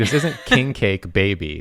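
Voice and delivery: "isn't" stressed and said slowly. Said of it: "where you put the emphasis".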